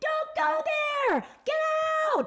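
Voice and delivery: fake screaming.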